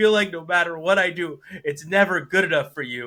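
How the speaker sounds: loud, sobbing, wounded, crying voice. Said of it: "and he's crying. He's like".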